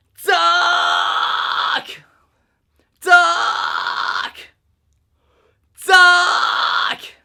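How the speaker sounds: very loud, forceful, pushed fry scream. Showing how to do the technique, demonstrating a pushed fry sound. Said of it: "as you push on it like this".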